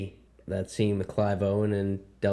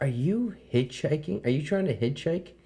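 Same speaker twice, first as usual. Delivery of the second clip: irritated, angry, high, accusing, demanding tone; 7 semitones higher than usual. Retelling what a driver said after stopping: imitating an angry lady. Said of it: "she's pissed".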